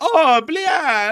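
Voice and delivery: sudden loud, high-pitched blurted outburst. Teasing the other speaker by repeating his line in a Luigi voice. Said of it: "You're like".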